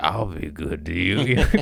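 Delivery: sweet, innocent, harmless little cat voice. Retelling a comedian's voiceover of an innocent-looking cat: Tony Baker cat voiceover. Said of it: "He's like".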